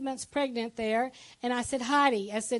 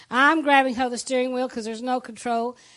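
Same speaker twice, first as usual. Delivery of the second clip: ordinary talk, nothing marked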